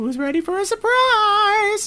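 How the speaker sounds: very high, loud, slow, sing-song animatronic bear voice. Playing a game and setting up keys, the speaker does a high-pitched Funtime Freddy voice. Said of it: "such a high-pitched voice".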